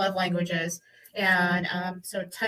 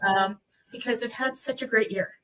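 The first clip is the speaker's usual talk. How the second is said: choked-up voice, emotion catching in the throat; 3 semitones higher than usual. Talking about handing over the gavel at year end: choked up with emotion. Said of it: "I didn't realize I was gonna get emotional and all choked up".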